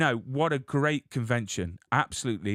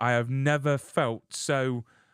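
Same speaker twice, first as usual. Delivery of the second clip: ordinary talk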